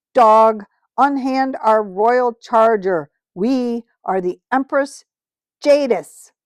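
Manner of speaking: cold, clear ringing voice. Reading a story aloud, the witch ordering the cabby away from the horse: cold, clear ringing voice. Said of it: "came her cold, clear voice, ringing loud".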